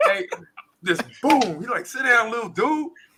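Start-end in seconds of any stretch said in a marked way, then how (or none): 1.9-2.9 put-on high, angry, condescending older-kid voice. Telling how a bigger kid punched him, then told him off; imitating an angry older kid. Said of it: "he was mad".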